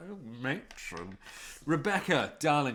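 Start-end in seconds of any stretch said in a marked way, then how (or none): 0.1-1.2 cheeky, suggestive, innuendo-laden exclamation. Showing the line's cheeky style with a quip: Carry On film style line. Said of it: "a carry on sort of nature".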